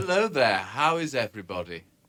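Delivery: heavily laid-on, put-on very English accent. Greeting the audience as the recording goes live: put-on English accent. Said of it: "That was my very English accent".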